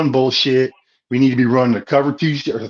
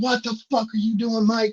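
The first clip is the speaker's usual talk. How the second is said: put-on enraged outburst, high-pitched angry screaming; 9 semitones higher, 6 dB quieter than usual. Retelling what was yelled at the coach during the game: retelling own screaming. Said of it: "I was screaming".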